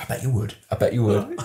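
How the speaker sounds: goading, taunting schoolteacher tone. Asked for the voice, retelling a school teacher's words: imitating a teacher's voice. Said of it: "Can you do the voice?".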